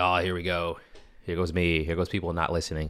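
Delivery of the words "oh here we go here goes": plain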